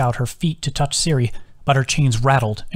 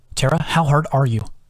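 plain

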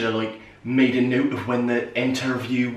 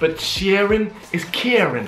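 high, badly done put-on New York accent; 8 semitones higher, 3 dB louder than usual. In an improvised popcorn scene with a partner, speaking in a New York accent. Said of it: "In a New York accent".

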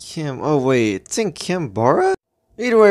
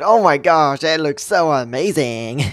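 weird, fake excited voice. Parodying typical Animal Jam YouTubers after naming an item, in a fake excited voice. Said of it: "I'm just gonna pretend to be so excited".

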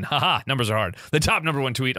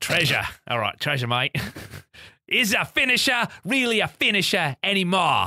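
put-on Australian accent, pitched up; 5 semitones higher than usual. Host reading out a listener's question, attempting an Australian accent. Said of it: "I guess I have to attempt an Australian accent".

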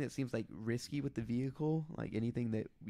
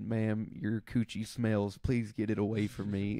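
put-on Southern accent, louder; 2 semitones lower, 5 dB louder than usual. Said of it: "he has a southern accent".

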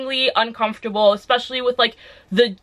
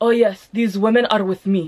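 brief attempted Russian accent; 2 semitones lower than usual. Retelling what a police officer told his colleagues: attempted russian accent. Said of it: "that brief ass attempt at a Russian accent".

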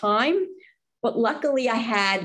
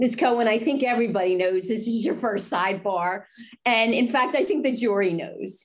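plain

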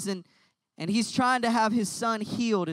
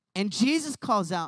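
plain

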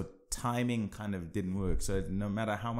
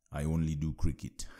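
put-on Jamaican accent; 5 semitones lower than usual. Quoting what he said in a past conversation, in a Jamaican lilt. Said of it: "in his Jamaican lilt".

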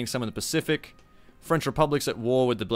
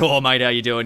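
broad exaggerated Australian accent, louder; 7 dB louder than usual. Retelling serving old customers at a fish and chip shop: exaggerated Aussie accent. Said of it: "it was still very much an Aussie thing".

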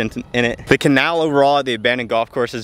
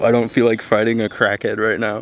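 ordinary talk

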